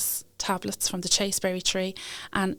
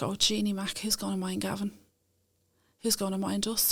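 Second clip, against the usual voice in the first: mock panicked, frantic voice; 4 dB quieter than usual. Retelling own past worried words about childcare: imitating own past panic. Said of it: "I started panicking".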